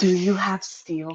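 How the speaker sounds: hushed, very quiet half-whisper, close to the ear. Calling another speaker over to ask a quiet question: half-whispering. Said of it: "I need to whisper to you".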